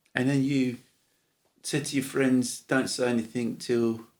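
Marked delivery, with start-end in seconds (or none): none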